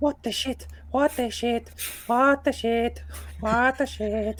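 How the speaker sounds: very high, slow muttering repeated on a loop. Voicing a shaken character muttering over and over: muttering to himself. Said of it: "just muttering over and over".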